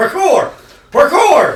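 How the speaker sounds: imitated yelling. Retelling watching a chase scene on rooftops: imitating own past yelling. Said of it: "I started yelling it".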